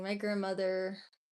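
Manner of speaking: ordinary talk, nothing marked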